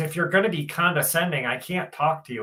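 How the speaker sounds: put-on young, teen-sounding voice like a fifteen-year-old. Retelling a phone call with a store manager: imitating a teen-sounding manager. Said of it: "he sounds like he's fifteen".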